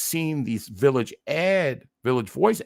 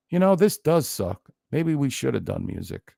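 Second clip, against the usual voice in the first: completely serene, soothing, unruffled, calmest possible voice. Retelling how [name] answered a furious man on the mic: imitating a very calm voice. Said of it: "in the calmest voice I could".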